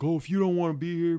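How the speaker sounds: angry, loud, shrill screaming. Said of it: "screaming at me".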